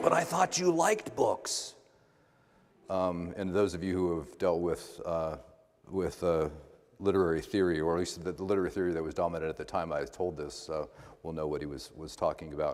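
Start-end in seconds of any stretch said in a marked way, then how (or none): 0.0-1.7 put-on very high, rough, gravelly Boston accent. Retelling what a man said on the phone after hearing career plans, gravelly Boston accent. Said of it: "in his gravelly Boston voice".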